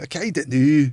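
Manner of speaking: line done in a put-on Scottish accent. Comparing a weak accent attempt to the Scottish: Scottish accent. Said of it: "It's like the Scottish just going".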